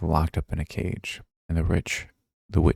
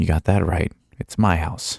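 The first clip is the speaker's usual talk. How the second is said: short, sharp, curt snapping delivery. Reading a fairy tale aloud, voicing the witch: snapping. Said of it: "snapped the witch".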